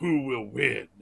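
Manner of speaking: big movie trailer narrator voice. Making fun of a pretentious dc trailer, in a big trailer voice. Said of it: "trailer voice".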